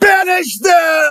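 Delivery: commanding, shrill yell pitched very high. Voicing the Marquise pointing at the party and yelling out. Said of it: "and yells out".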